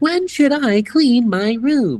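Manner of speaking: very high-pitched text-to-speech voice. Act out people's TikToks about their disgusting gamer setups, in the TikTok voice. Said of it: "with the TikTok voice being like".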